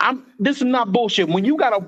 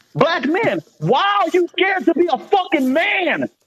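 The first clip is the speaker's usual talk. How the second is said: high, exasperated, frustrated yelling; 7 semitones higher than usual. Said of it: "I am yelling because I'm frustrated".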